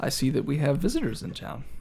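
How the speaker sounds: serene, composed, very calm, soft delivery. The person in robes walks over and greets the visitors, speaking very calmly. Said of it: "just talks very calmly to you guys".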